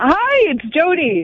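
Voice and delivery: happy, cheerful, bright and high. On a morning radio show, a co-host greets listeners, sounding happy. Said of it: "You sound happy".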